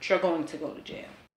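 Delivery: ordinary delivery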